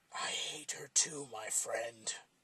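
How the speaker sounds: slow talking machete voice. Narrator reading the voice from the corner of the car, the machete: talking machete voice. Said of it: "The puppet could now see that the voice was coming from a large blade. ... The machete".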